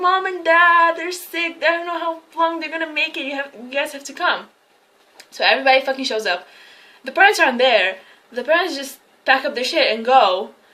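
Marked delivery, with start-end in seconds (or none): 0.0-4.5 put-on tearful sobbing, pitched up. Retelling a movie scene where a girl phones relatives: imitating fake crying. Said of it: "fake crying".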